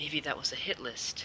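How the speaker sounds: very soft, very quiet mutter under the breath. Speaking in character after hearing about a deadly fire: muttered under breath. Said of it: "I sort of say under my breath".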